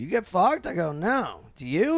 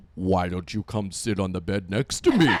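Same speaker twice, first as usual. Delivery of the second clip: very deep, low-pitched robotic voice; 10 semitones lower than usual. Retelling what a man said to him, comical RoboCop deep voice. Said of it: "he is a comically like RoboCop deep voice".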